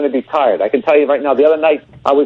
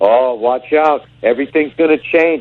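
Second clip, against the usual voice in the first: mock foreboding, doom-laden, ominous tone. Imitating people who warn someone having a kid: imitating an ominous tone. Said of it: "this ominous tone".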